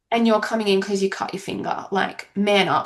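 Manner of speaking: ordinary talk, nothing marked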